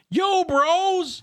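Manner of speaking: very shrill, loud, mouse-like yell, bros stretched. Stepping out of the tower, a player's character calls to those watching: speaking very loudly. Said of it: "speak very loudly".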